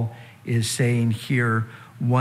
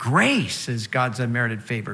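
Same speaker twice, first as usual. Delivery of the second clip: "grace" stressed, line pitched lower. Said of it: "we also need to put the emphasis on grace".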